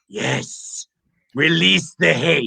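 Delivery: rough, creaky villain voice. Doing one quick line in their best impression: Palpatine voice. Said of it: "In my best Palpatine voice".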